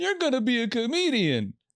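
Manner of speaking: put-on very high, swooping words spoken through a laugh. Retelling what mom said to a ten-year-old: imitating mom talking mid-laugh. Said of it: "while she was mid-laugh".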